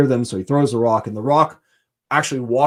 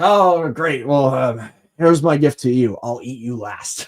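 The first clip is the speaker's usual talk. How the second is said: put-on drunken giant voice, slower. Retelling the myth, the Cyclops answers the man who gave him wine, mock-drunk Polyphemus voice. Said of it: "very drunkenly".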